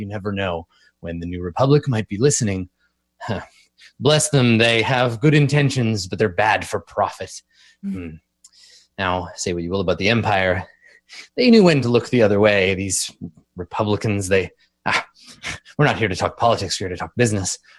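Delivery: conspiratorial, confiding, just-between-us patter. Retelling a game character's lines after he leans in, mock-conspiratorial character aside. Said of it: "he leans in all conspiratorially".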